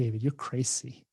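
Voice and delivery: mock Venezuelan-accented voice. Retelling what a friend says to them: imitating Marjorie's Venezuelan accent. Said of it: "She has this great accent".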